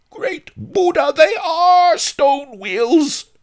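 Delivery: very high, very loud, drawn-out shout. Narrator reads a gentleman's outburst from his window: yelling. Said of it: "he yelled".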